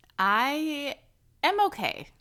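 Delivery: doubtful, rising intonation. Answering how you are, unconvinced, rising like a question. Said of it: "you didn't sound fully convinced of that fact".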